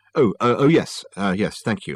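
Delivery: plain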